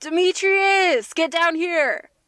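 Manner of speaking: loud, high-pitched yelling. Calling up to a companion on the wall, in character: yelling up. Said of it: "I I yell up".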